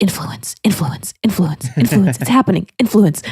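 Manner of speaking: pressing stage whisper. Retelling whispering into her ear as she mimics influencers, retelling a whisper. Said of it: "I'm just like whispering into Kirsten's ear".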